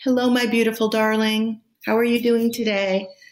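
tender, high pet-talk voice. Explaining how to talk to growing sprouts, tender pet-talk voice. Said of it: "the same voice you'd use with your pets".

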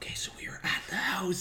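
hushed, breathy, sneaky whisper. Retelling a filmmaker nearing a house on camera: imitating someone whispering. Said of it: "He's, like, whispering".

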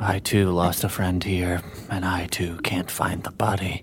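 low, slow, rough gravelly voice. Role-play, Z looks off into the middle distance: Z's gravelly voice. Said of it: "in a gravelly voice says".

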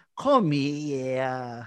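fake New York accent with the word here drawn out. Imitating a weird line from an episode: Christopher's fake New York accent. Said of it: "act with a New York accent".

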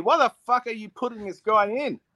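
mock, high, exasperated yelling and screaming outburst. Retelling a past night screaming at the tv about a player: retelling screaming at the tv. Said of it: "screaming at the T V".

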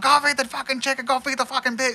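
high, full-on, all-out scream with weird pitch. Imitating a character who screams everything: imitating someone screaming full on. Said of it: "just screaming full on".

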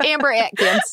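exaggerated put-on thick, borderline Texas accent. Asked to give more of the accent, repeating a character's name in a thick put-on accent. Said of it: "can you give me more of this accent".

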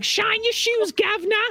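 very high-pitched, put-on Cockney accent. Demonstrating what a cockney accent sounds like: cockney accent. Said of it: "a Cockney accent ... It's like".

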